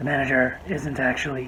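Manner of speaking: low, loud, confused-sounding voice. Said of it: "looks at her confused and goes".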